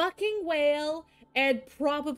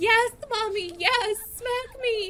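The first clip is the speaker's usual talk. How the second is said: mock high, screamed outburst, gamer style; 8 semitones higher, 3 dB louder than usual. Retelling a moment from watching Silvervale's stream, imitating Silvervale screaming. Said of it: "she's screaming".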